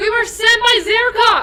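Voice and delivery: booming, very high, very loud, shrill shout. In a tabletop game, a player's character tells who sent them: very loud. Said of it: "She says very loudly".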